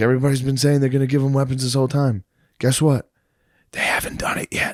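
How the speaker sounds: put-on whisper. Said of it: "why are you going yin yang twins?".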